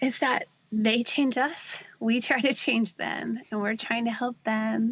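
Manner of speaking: choked up, voice catching with emotion. Asked what Ryan has taught them over eighteen years, a speaker answers: choked up. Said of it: "I'm getting choked up".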